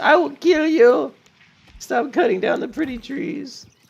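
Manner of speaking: agonized voice. Watching someone cut down pretty trees in the game: agonized voice. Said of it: "he sensed the agony in my voice".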